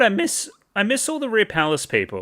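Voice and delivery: high voice cracking partway through. Saying you miss old friends you haven't seen in ages, voice cracking. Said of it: "Bit of a voice crack there too".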